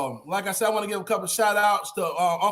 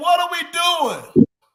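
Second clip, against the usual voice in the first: loud, high-pitched screaming yell; 9 semitones higher, 6 dB louder than usual. Recalling watching the game, the speaker retells screaming at the TV. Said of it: "I'm screaming at the T V".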